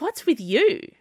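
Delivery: high, insistent, demanding voice. Zee turns on Dennis, who is trying to hide behind her, demanding. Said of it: "she demanded".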